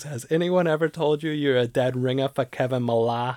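put-on loud, old-sounding voice with Boston accent. Retelling what an old man once said to your brother, in a boston accent. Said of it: "Your Boston accent is".

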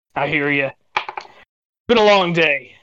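speaking with a light chuckle. Game master voicing a guy answering the players in a D&D game, chuckling guy. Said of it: "The guy kind of chuckled".

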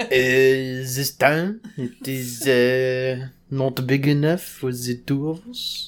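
put-on French accent. Repeating a movie line when asked by another speaker: french accent. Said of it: "Now say it in a French accent".

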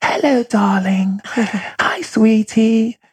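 high-pitched, fairy-like voice. Describing how the speaker's own mother talks, imitating mother's fairy voice. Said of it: "she talks like a fairy. Her voice is like this".

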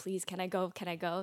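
ordinary talk

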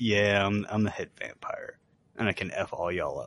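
ordinary talk

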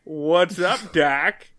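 wisecracking, tossed-off cartoon rabbit voice. Retelling a cast member's line to another character, Bugs Bunny impression. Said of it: "That was a solid Bugs Bunny".

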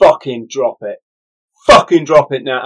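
menacing, threatening, reined-in, held-back delivery. Retelling threatening a man holding a knife, quietly: quietly retelling a threat. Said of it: "I'm being quiet 'cause my family's".

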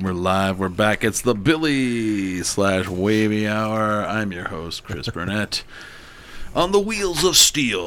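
slow, drawn-out radio announcer voice, "wavy" stretched. Host opening the show's second hour, sounding like a DJ. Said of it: "I really sounded like a fucking whatever DJ right there".

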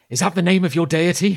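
absolutely terrified. Barrow reacts to the woman's shouting, terrified. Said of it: "who looks absolutely terrified".

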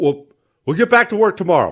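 put-on old man voice. Retelling a phone call, imitating his old man on the phone. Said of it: "It's the old man".

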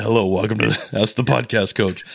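voice sunk right down into deep, low bass.

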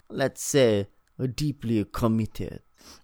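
put-on weird French woman voice. Acting out a movie scene as Rosier: weird French lady Rosier voice. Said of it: "some weird lady named Rosier".

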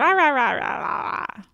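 babbling cartoon alien character voice. Speaker does a bit, then says it was them: Stitch voice. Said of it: "that was me, Stitch".

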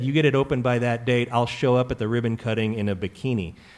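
ordinary talk

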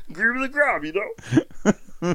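very high, loud, booming comic goofball character voice. Repeating a line, doing a John C. Reilly impression. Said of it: "That was a great John C. Reilly".

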